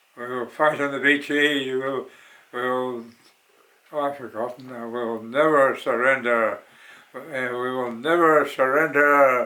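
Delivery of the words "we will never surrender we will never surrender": grand, rousing oratory, like a stirring speech. Quoting a famous wartime line the way Churchill said it: Churchill impression. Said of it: "that's the way he said it".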